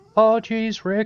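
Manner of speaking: put-on shrill, high, loud yelp, done poorly. Replying to a Rick bit in a role-play answer, a weak Morty impression. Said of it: "I can't really do a good Morty impersonation".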